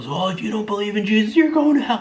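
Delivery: play-acted very high, rising scream. Retelling how a random guy reacted to being turned down, imitating someone screaming. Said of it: "He starts screaming at the top of his lungs".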